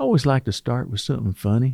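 animated sing-song voice swinging pitch up and down. Quoting a pastor's sermon opening line: Joel Osteen impression. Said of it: "that's my best Joel Osteen vo-, uh, voice".

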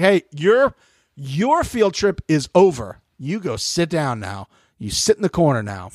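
slow, high mock patronizing talking-down voice. Retelling T J sending players away like kindergartners: imitating T J talking down. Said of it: "he was talking to, like, kindergartners".

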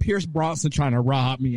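ordinary talk, nothing marked

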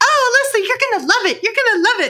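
very high-pitched, peppy cheerleader voice. Quoting the vice principal jumping in, in her best cheerleading voice. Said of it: "put on her best cheerleading voice".

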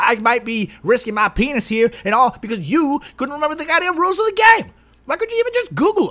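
worked-up ranting. Ranting at CMO for not knowing the game's rules, getting heated and ranting. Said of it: "I'm getting really heated over here".

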